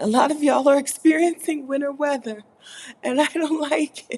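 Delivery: very high, giggly speech broken by hiccups. Telling y'all about winter weather, hiccuping and laughing. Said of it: "I'm coughing and hiccuping and laughing at the same time".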